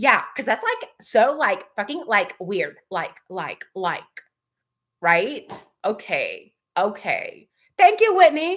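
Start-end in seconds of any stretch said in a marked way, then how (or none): none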